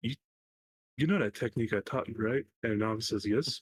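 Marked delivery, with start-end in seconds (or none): 0.0-2.5 muttering under the breath. Game master voices a character speaking to another, muttering under his breath. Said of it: "You just hear him underneath his breath".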